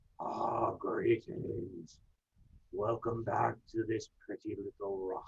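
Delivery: low, hushed, grumbly tree-elemental creature voice. Voicing the elemental as it turns to greet the tree warden, in a low, grumbly voice. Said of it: "in his low, grumbly voice".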